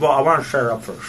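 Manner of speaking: talking with mouth full. Podcaster eating sausage mid-conversation, talking with mouth full. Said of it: "Sorry, I'm eating it".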